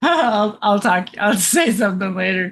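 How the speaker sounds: laughing through the words. Reacting to chat messages, laughing while talking. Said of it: "I'm just laughing right now".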